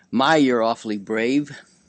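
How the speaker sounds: ordinary delivery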